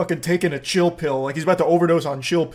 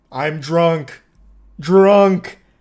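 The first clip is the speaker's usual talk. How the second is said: loud, blunt caveman voice, one word at a time; 6 dB louder than usual. Retelling how Wayne answered about his drinking, imitating Wayne's caveman one-word talk. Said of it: "Speaking like a caveman with like one word".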